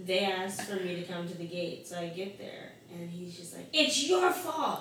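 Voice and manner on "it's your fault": shrill, very high, full-throated scream at top of lungs. At the gate, retelling what a man who missed his flight screamed, retelling a top-of-lungs scream. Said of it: "he screamed at me at the top of his lungs".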